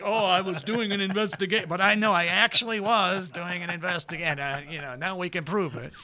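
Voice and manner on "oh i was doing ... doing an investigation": guilty, caught-out, lame-sounding tone. Imitating someone caught out who gives a lame excuse: mock caught-out excuse. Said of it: "you sound like every other asshole in the world who gets caught going like".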